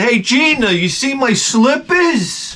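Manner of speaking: acted, slow, high, very drawn-out holler. Acting out a call from the shed: pretend yelling from the shed. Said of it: "I feel like yelling from the shed".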